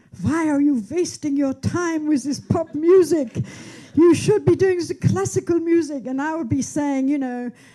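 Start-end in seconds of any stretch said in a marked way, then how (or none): 0.2-6.1 put-on thick, heavy, pitched-up German accent. Retelling what the speaker's classical-musician father used to say, in his heavy german accent. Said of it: "in his heavy German accent".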